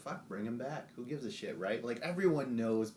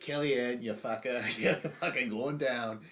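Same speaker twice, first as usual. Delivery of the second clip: put-on angry ranting in a Boston accent; 4 dB louder than usual. Retelling what an angry reality-show contestant shouted: imitating an angry Boston accent. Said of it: "this Boston accent mode".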